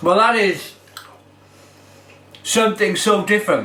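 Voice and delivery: speaking with mouth full. Speaker reviewing a drink, talking while chewing. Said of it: "Sorry for me chewing".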